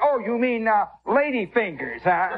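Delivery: pointed, showy delivery, making a big show of words. Speaker recalls answering a customer so other buyers hear, retelling speaking very loudly. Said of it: "I would say in a very loud voice".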